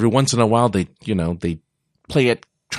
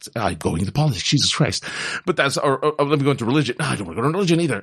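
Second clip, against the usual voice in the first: very fast, rattled-off, rushed ranting delivery; 4 semitones higher than usual. A speaker getting riled up mid-rant, talking fast. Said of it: "i'm going to slow down i'm talking fast".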